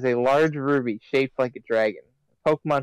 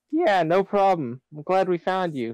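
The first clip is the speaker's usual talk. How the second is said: voice cracking, pitched up; 6 semitones higher than usual. A player answers the rescued character's thanks, voice cracking. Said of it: "that was a really bad voice crack".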